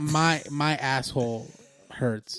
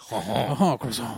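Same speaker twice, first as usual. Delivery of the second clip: mock, put-on French accent; 3 semitones lower than usual. Told he talks with a French accent, a podcast host plays along: mock French accent. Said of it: "You talk with a French accent".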